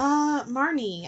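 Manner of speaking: super dorky, awkward voice. Telling how she answered when a man asked her name, in the dorkiest voice. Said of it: "I say in the dorkiest voice ever".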